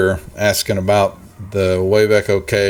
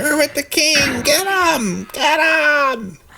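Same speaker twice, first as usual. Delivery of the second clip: shrill, very high goblin yelling, "him" drawn out. Game master voicing goblins down the hall, yelling goblins. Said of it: "They're yelling".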